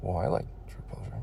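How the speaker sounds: seductive whisper.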